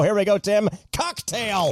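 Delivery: slow, drawn-out game show host announcer voice. Kenny running a game, calling the next turn to tim in his game show host voice. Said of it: "your game show voice is just getting better and better".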